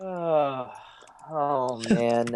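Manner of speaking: soft, tired, weary, unenthused tone. Answering whether they're excited for another Avengers: weary, unenthusiastic tone. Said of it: "I say it with this tone".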